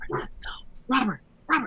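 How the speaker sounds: loud stage whisper. Retelling trying to get a companion to leave: retelling a loud whisper. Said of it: "I'm trying to whisper loudly".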